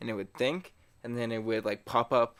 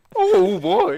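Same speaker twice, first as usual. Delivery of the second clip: shrill, loud, booming, high walrus-like honk and bellow; 14 dB louder than usual. Speaker talking about watching Everybody Loves Raymond, walrus-like voice. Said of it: "sounds like a walrus".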